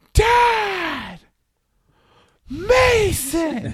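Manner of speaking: shrill, very high acted yell, dad stretched long. The speaker acts out for the listener what the listener yelled, retelling a yell. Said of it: "I think this is what you yelled".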